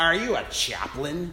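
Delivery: scornful, derisive, mocking sneer. A man in a chair questions the narrator walking over to him, sneering. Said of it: "he sneered".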